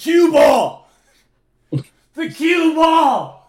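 shrill, stretched-out, very loud, high scream. Retelling a drunk pool game, imitating a friend screaming. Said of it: "Just screaming at you".

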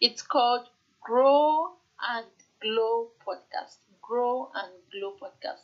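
slow, deliberate, carefully spaced, every word clear. A podcast host says the show's name so it isn't confusing, slowly and deliberately. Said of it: "Let me say slowly".

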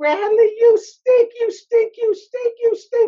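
very high, shrill, full-lunged, drawn-out screaming. Retelling how the coach stood behind him on the field: imitating a coach screaming. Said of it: "he would scream at me at the top of his lungs".

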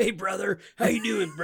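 big wrestler-style bro voice. Picturing meeting his childhood hero and doing a Hulk Hogan impression. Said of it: "trying to do my Hulk Hogan impression".

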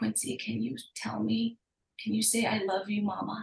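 quiet, soft, coaxing, hushed half-whisper. Retelling own past question to her: imitating own half-whisper. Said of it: "I whispered to her".

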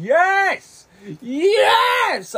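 mock very high, swooping, geeked-out excited yelling. Retelling own reaction on hearing how a movie ends, re-enacting own screaming. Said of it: "I'm sorry for screaming in this podcast".

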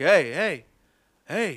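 loud screamed voice. Speaker recounts a man at the end of a single-file line, retelling a man screaming. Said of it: "The guy at the end started screaming".

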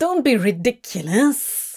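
spat out, spitting delivery. One companion responds to the other's correction: spat. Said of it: "Crowley spat".

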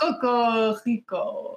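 sultry put-on French accent, half Spanish, seductive, bad. Trying the French accent again, say it in a seductive, failed French accent. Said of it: "That was so seductive".

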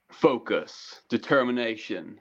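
American motivational-video narrator voice. Asking whether the other person means that kind of clip, in a classic deep American voice. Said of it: "classic like deep American voice".

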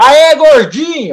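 very high-pitched, yelled shout. Telling how someone in a passing car yelled at him: retelling a shout. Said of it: "alguém gritou".

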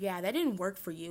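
ordinary talk, nothing marked

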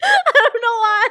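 high, loud laughing with fake tears.

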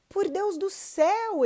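very high, shrill, loud shout. The farmer coming running into the cow pen, shouting. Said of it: "ele gritou".

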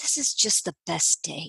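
low murmur, muttered under the breath. Retelling a remark from the back seat: imitating someone speaking under his breath. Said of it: "kind of under his breath".

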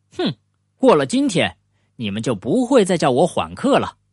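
ordinary delivery

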